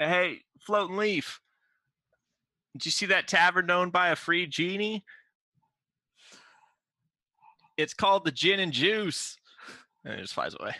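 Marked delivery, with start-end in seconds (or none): 0.0-9.4 long-distance holler, high and drawn-out. Calling out in character to a bird flying away: yelling out. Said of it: "I yell out".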